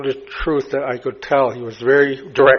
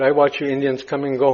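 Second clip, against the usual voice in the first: ordinary talk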